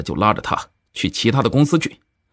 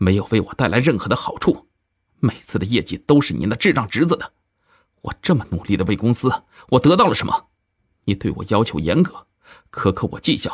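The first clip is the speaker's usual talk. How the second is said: plain reading voice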